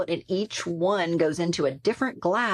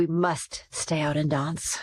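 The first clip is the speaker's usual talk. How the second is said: attempted British accent. Retelling what a British friend said about going dancing: attempt at British accent. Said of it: "I'm not good with the accent".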